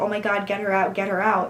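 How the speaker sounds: usual speaking voice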